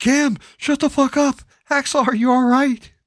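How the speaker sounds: frantic panicked yell, very high and very loud. Telling the others how Johnny yelled, imitating Johnny's panic yell. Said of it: "it was like panic yell".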